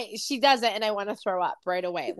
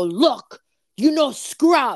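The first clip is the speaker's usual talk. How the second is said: loud, scolding, boss-like voice; 6 dB louder than usual. Retelling how a former boss called them over: imitating a former boss. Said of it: "you imitating that was the best thing ever".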